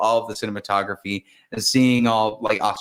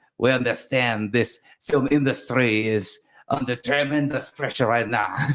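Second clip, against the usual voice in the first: put-on French accent on English; 2 semitones higher than usual. Talking about cinema and the film industry, the speaker puts on a French accent. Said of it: "should I do it in a French accent".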